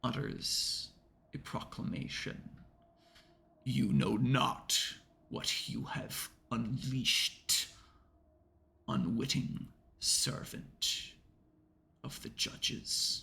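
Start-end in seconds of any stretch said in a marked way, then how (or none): 3.6-13.2 breathy, whispered, rumbling divine voice. Narrator voicing the god Anubis proclaiming to the players, voice like rumbling thunder. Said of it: "its voice like thunder rumbling through the through your skull".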